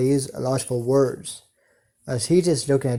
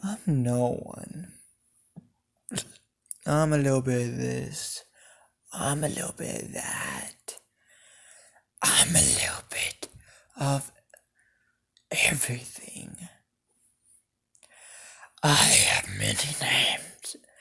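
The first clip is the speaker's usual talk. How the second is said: evil, devilish whisper like a demon. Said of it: "this devilish, evilish, sounding voice says".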